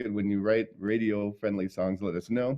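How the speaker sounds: plain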